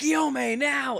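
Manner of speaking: piercing, very loud, very high, raspy scream. Retelling an anime scene where a character calls for help: imitating a scream. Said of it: "she just screams".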